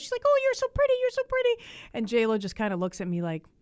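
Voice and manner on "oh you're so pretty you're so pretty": mock, very high, loud, effusive fawning gush. Retelling seventy-year-old women meeting J Lo: imitating gushing. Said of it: "these seventy-year-old women gushing over J Lo".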